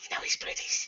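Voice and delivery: very hushed, soft whisper. Telling a story, the speaker acts out a woman whispering in the taxi driver's ear. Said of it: "she just whispers in his ear".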